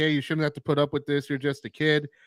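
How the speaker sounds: normal talking voice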